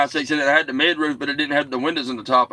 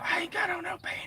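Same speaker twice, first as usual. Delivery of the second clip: very soft, breathy, playful whisper, very hushed; 13 dB quieter than usual. Told to whisper it the way it's done on CB radio, playful whisper. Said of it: "You got to whisper it".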